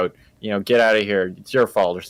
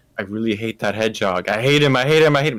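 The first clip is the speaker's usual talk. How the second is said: put-on ranting, growing more exasperated with each repeat. Retelling the villain's repeated complaint about the hedgehog: imitating Robotnik's exasperated tone. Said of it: "in more exasperated tone every single time".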